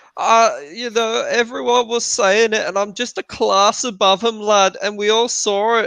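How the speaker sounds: put-on very high, annoying Scouse accent. Retelling a boxer's post-fight interview answer: imitating Callum Smith's Scouse accent. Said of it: "he applies with that annoying accent going".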